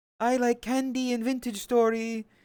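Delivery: very high, teasing, mocking voice. Making fun of someone for humor, do a mocking Chris impression that sounds nothing like him. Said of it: "It doesn't sound like Chris in the slightest".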